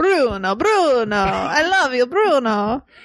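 heavy, laid-on, thick Italian accent. Asked to repeat a line from watching a film, in a thick italian accent. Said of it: "in a thick Italian accent".

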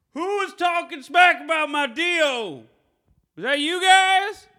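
very high, loud holler, stretched out. Retelling a man on a restaurant porch yelling out to everyone outside, imitating a man yelling. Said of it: "he just yells out to everyone".

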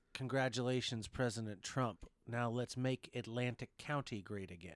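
ordinary talk

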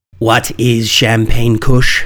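severe, stern put-on reading voice. Reading a Leafly strain description aloud in a stern Jeremy Irons voice. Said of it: "In the stern voice of Jeremy Irons".

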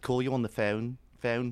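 put-on Liverpool accent. Imitating how people from Liverpool say the word phone: Liverpool accent. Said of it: "like a Liverpudlian from Liverpool, where they say".

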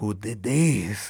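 put-on heavy, laid-on Spanish accent. Retelling a story, quote the man coming downstairs in a heavy Spanish accent. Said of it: "with his heavy Spanish accent".

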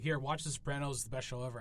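ordinary talk

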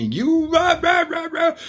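screechy, very high-pitched, shrill yelling. Retelling how a lady called and yelled: imitating someone yelling. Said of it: "yelling at me".

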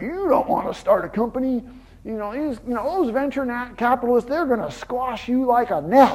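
put-on high, drawling Texas accent, words stretched out. Retelling a visit to John in his office, doing John's Texas drawl. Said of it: "he has this Texas drawl".

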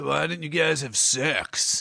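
slow, mocking copycat voice. Teasing another speaker by repeating their question: imitating the other speaker's voice. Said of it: "That's how I do your voice".

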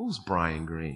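mock dismissive, belittling tone. Retelling a question asked at a raise review, imitating a belittling tone. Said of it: "the tone he said it was like, "You're nothing."".

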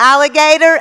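very loud, high yell at full volume. Retelling calling an imaginary friend on the phone as a child: retelling saying it loudly. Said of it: "I would say it really loudly".

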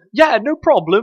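high, loud, shrill put-on British accent, monkey voice. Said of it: "all the voice acting is in British".

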